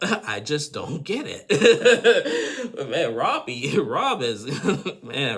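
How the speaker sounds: high, slow laughing through the words, disbelieving.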